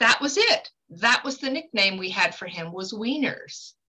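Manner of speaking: ordinary talk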